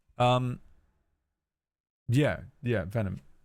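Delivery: ordinary delivery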